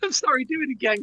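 high, giggly, laughing through the words. Asking the other speaker to redo the intro, laughing while talking. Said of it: "you just made me laugh".

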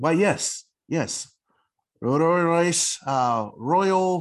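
high, halting, intimidated stammer. A game master voices an intimidated blacksmith answering a questioner, stammering, intimidated. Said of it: "he just kind of stammers a little bit, still intimidated".

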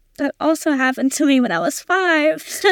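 close to crying, on the verge of tears. Speaker responding to a survivor's story, on the verge of tears. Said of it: "I'm going to start crying".

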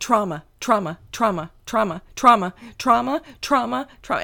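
booming, loud, repeated yelling. Recalling a rare daytime phone call from him, imitating someone shouting. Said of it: "it's just him yelling".

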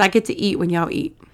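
ordinary delivery

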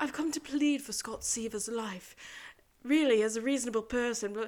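put-on British accent. Retelling a scene where Sean pleads for Scott Seaver's life: Sean's put-on British accent. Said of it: "starts talking in a British accent to him".

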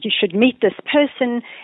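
put-on deep German accent. Retelling a colleague's introduction: imitating a deep German accent. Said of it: "in his very deep, uh, kind of German accent".

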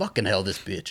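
ordinary delivery

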